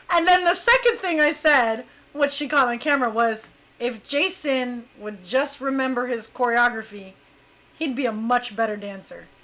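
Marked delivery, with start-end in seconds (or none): none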